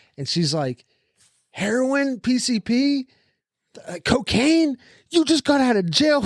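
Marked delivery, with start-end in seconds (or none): 1.5-6.3 slow, high-pitched, drawn-out, hollered yell. Retelling what a lady said to the patient in the next bed: imitating someone yelling. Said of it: "yelling at you for somebody else".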